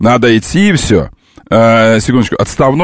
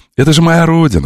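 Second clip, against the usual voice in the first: cordial, friendly, inviting, welcoming tone; 4 semitones higher than usual. Coaching comrades to rehearse a phrase: friendly, welcoming voice. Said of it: "Надо приветливым голосом".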